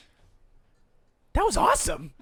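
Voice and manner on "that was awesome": much higher, thrilled gasping character voice. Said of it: "And she goes".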